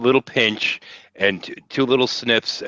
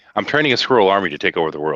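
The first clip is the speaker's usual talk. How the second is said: plain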